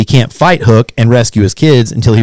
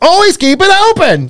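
very high, drawn-out movie-star voice. Retelling a movie's ending scene: Robin Williams style delivery. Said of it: "in typical Robin Williams fashion".

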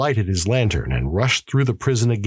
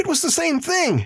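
frightened words gasped out, very high pitched. A prisoner answers the warden's question about what frightened him; gasping out the words. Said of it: "gasped the prisoner".

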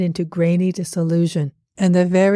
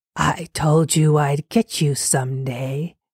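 dry, rustling, scuttering creature voice; 3 semitones lower than usual. Narrator reads the words of a figure in a mass of rags, in a dry scuttering voice. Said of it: "it was like the dry scuttering of spiders".

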